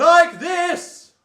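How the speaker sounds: very, very loud, very high-pitched, chest-register voice. Showing how loud chest register can get: very, very loud speech. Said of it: "very, very loud speech".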